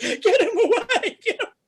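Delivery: very high, loud, drawn-out tearful crying wail. Retelling a woman's reaction to a clown: imitating someone crying. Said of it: "she's crying".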